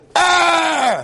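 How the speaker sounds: scream dropping in pitch.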